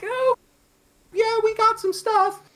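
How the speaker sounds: very high, timid, unsure mumble.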